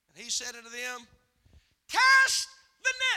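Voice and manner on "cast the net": shrill, very high, very loud full-throated scream. Acting out the scene, calling to the fishermen in the boat: screaming. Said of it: "I'm screaming at you, aren't I?".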